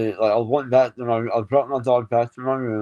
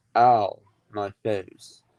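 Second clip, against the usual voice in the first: completely unruffled, calm, casual, matter-of-fact delivery; 2 semitones lower than usual. Retelling what a sister said from another room: imitating a calm quiet voice. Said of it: "my sister's voice very calmly go".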